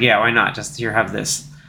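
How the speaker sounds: put-on grumpy old adventurer voice. Retelling how the character hands off a gift: grumpy Indiana Jones voice. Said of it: "grumpy Indiana Jones".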